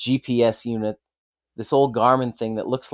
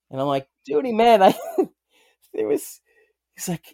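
plain

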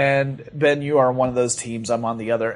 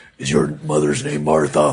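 rough, creaky, gravelly caped-hero voice. Joking after being told the voice sounds Batman-esque: Batman voice. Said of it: "a little Batman-esque".

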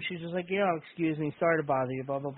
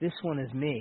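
soft, gentle, soft-spoken, almost creepy delivery; 2 semitones lower, 4 dB quieter than usual. Retelling a wrestler handing a fan his own figure: soft-spoken Bray Wyatt voice. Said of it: "real soft-spoken voice".

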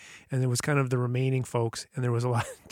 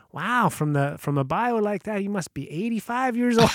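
terrible fake Newfoundland accent, higher, slower; 9 semitones higher, 5 dB louder than usual. Retelling what a woman from newfoundland said about his bio, terrible newfoundland accent. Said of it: "I'm doing a terrible newbie accent".

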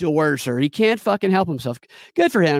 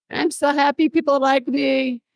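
put-on smug laughing voice, higher pitched; 10 semitones higher than usual. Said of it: "already laughing like an idiot".

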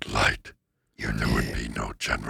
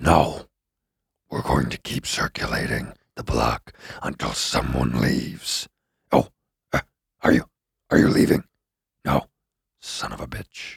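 loud put-on demonic voice; 4 semitones higher, 6 dB louder than usual. Impression of a demon who just won't valet, put-on demon voice. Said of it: "This is my impression of a demon who just won't valet".

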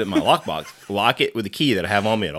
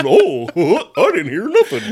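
silly cartoon voice with swooping pitch; 12 semitones higher, 8 dB louder than usual. Redoing the impression of a wife like Goofy from Goof Troop. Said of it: "fucking Goofy from Goof Troop".

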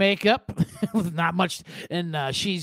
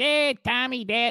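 strange, put-on Chicago accent, pitched up; 5 semitones higher than usual. Retelling a shoot where they asked for a weird Chicago accent. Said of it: "do a Chicago fucking, you know, weird accent".

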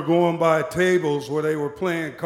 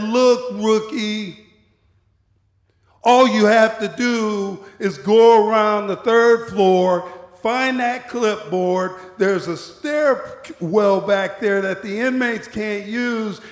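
put-on condescending tone, higher pitch; 4 semitones higher than usual. Retelling a coworker called Pierce explaining a shortcut: imitating a condescending coworker. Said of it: "He was so condescending".

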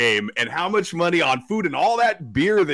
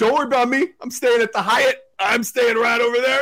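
put-on drunk man yelling, higher; 7 semitones higher than usual. Retelling a drunk man next to a family who kept yelling: imitating a drunk man yelling. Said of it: "the guy was really drunk, and he just kept yelling".

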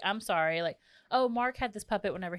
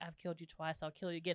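acted-out whisper, quieter than usual; 10 dB quieter than usual. Recounting a movie scene, the speaker acts out a mother whispering to a puppet, retelling a whisper. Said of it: "she whispers to him".

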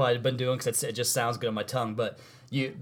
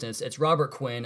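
ordinary talk

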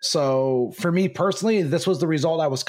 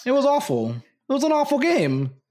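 natural New York accent, pitched up; 8 semitones higher than usual. Describing an awful basketball game, the speaker slips into a new york accent. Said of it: "Did you just bring out your New Yorker accent too?".

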